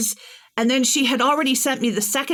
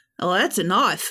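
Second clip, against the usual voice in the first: put-on Australian accent, pitched lower; 4 semitones lower than usual. Retelling the phrase said to oneself before Australian dialogue: Australian accent. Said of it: "going into any piece of dialogue in Australian".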